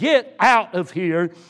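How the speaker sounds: deliberate, slow, angry delivery. Retelling a missionary ordering a woman away: imitating an angry voice. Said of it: "the missionary with an angry voice said".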